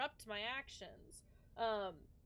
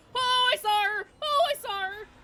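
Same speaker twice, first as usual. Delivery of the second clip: very loud, high-pitched, frightened screaming; 12 semitones higher, 17 dB louder than usual. Hiding from a pursuer in a horror game, screaming in fright. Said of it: "I'm just gonna scream into your ear".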